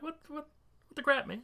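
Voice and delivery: startled, caught-off-guard stammering outburst, very high. Voicing a punched man who stares at the attacker: surprised. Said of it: "he looks surprised".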